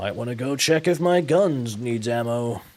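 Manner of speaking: loud, gruff Western American man's voice. Demonstrating voice options for a character, gruff western american guy voice. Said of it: "like gruff Western American guy".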